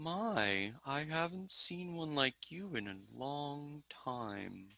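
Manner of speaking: very soft, hushed tree voice, "my" drawn out. Voicing a tree that answers a plant-speaking spell: talking tree voice. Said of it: "And it says".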